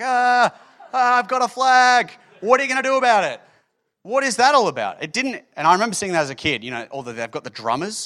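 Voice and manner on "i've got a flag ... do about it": high, stretched-out yelling. Mocking a flag-bearer in the middle of a battle, imitating a flag-bearer's yell. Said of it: "Just yelling like".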